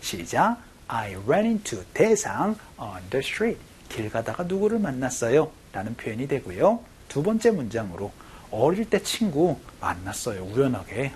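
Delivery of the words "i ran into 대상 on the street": very slow, drawn-out practice reading. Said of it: "한 번만 더".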